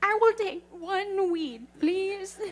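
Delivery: high, very slow, hesitant, unsure voice. Picturing a character trying weed for the first time: imitating Blake, unsure. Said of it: "I can see Blake being like".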